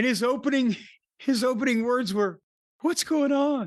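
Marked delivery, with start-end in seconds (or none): 2.8-3.7 breathless, sing-song delivery, pitched up, floating. Retelling a wrestler's opening words after the match: imitating Kenny's breathless sing-song voice. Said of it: "the breathless sing-song".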